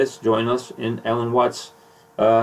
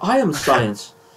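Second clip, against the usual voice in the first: put-on lofty British accent, self-assured and grand; 3 semitones higher than usual. Retelling a debate exchange, doing Richard Dawkins: Richard Dawkins impression. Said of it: "I got a little Dawkins in me".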